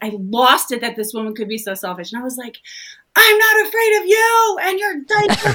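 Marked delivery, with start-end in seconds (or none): 3.1-5.5 mock, very high, shrill scream at top of lungs. Speaker retells losing it at a selfish woman, retelling a scream. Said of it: "I was screaming at the top of my lungs".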